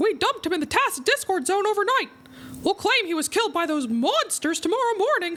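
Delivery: very high pitch with swinging pitch. Streamer reading a script line aloud while live, in a Mickey Mouse voice. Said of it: "I'll read this line as, as Michael Mouse".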